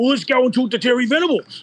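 put-on Cypriot accent, very high pitch. Telling a story about arranging a meeting with a coach, doing Con's accent. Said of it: "I'll do the Con the Con accent".

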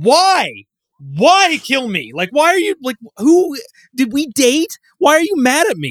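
very high, loud, baffled and angry confused outburst. Speaker describes a game character everyone is told to kill: mock-confused, angry Colt impression. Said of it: "how confused he is about everything and angry".

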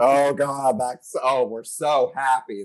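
ironic, detached, slow sarcastic delivery. Praising Helen McCrory's winks at the audience, the speaker acts her out: retelling Helen McCrory's sarcasm. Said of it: "her sarcasm was beautiful".

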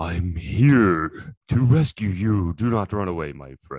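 deep, booming, thunderous, proclaiming voice. A figure in the storm finally speaks to the fleeing party, in a deep, thunderous voice. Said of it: "speak in this deep, thunderous voice".

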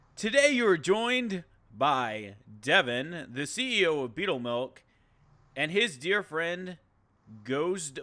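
exaggerated, cheesy, bad put-on announcer voice. Introducing guests on Beetlecast, bad announcer voice. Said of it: "I'm going to use my shitty announcer voice".

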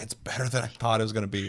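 ordinary talk

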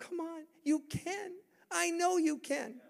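very high-pitched, coaxing, encouraging tone. Acting out a father pushing a child forward: urging someone on. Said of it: "he's pushing you forward, going".

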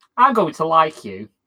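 speech broken by sniggering. Varys looks at a character and answers him, Varys sniggering while talking. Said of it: "sniggers and goes".

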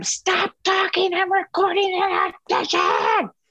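high-pitched screaming yell.

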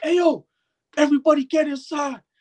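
mock hollering, very high, screamed. Retelling a performer with no mic calling the crowd inside; retelling a scream. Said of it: "This guy screams".

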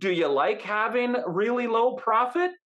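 snide sarcastic tone. Showing how a blunt question about profit sounds: mock sarcastic question. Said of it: "That's almost sarcastic now".

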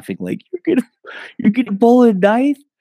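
mock shrill, very high, loud jeering belly laughter. Retelling how someone laughed at a man who pulled a knife; imitating loud belly laughing. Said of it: "Garrett just starts laughing ridiculously loud and like hard belly laughing".

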